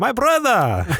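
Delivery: put-on Russian accent, very high and loud. Repeating the greeting for the other speaker, now in a put-on Russian accent.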